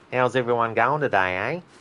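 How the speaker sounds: broad, heavy Australian accent. Greeting everyone while playing a game, in a thick Aussie accent. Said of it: "you get the really thick Aussie accent where you can start talking like this".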